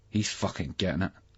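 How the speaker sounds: ordinary delivery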